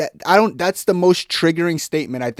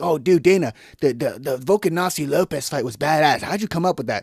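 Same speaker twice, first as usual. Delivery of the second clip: mock fawning, flattering reporter voice. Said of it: "media questions that he knows that they're gonna say something to glaze".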